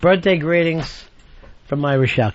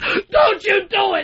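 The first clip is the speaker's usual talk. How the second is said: very high, very slow, drawn-out put-on drunken hollering. Retelling how he yelled at his friends while they were ordering, retelling own yelling. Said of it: "I'm fucking yelling at them like that".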